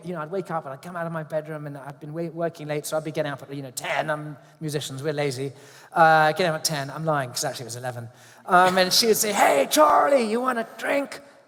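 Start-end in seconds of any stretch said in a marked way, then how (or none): 9.3-11.2 put-on, very high-pitched, slow, drawn-out holler. Retelling Debbie Reynolds greeting him each morning, imitating Debbie Reynolds shouting. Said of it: "she'd be shouting at me every morning".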